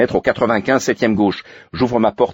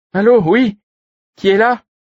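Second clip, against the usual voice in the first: put-on very high, raised elderly woman's voice; 13 semitones higher, 6 dB louder than usual. Reading a story, the narrator voices a woman answering the intercom in an old lady voice. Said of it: "Une voix de vieille dame".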